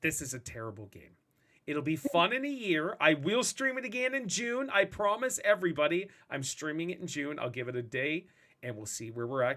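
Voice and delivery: ordinary delivery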